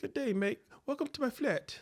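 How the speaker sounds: very high-pitched, super proper posh English accent. Talking about disliking super proper English accents, put-on proper English accent. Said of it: "them super proper English accents from like overseas England".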